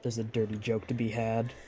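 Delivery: muttered under the breath.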